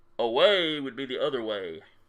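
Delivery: loud, booming, resounding big-guy voice. Voicing the big guy's reply, the speaker uses a booming voice. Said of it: "in a booming voice".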